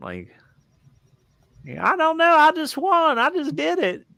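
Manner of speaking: Appalachian accent, pitched very high. Talking about getting a voice down, trying an appalachian accent. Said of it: "Appalachian accent".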